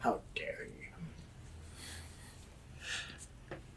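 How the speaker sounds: barely audible, hushed, whispered mutter under the breath. In a role-play, a character answers being told off, muttered under his breath. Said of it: "just under his breath".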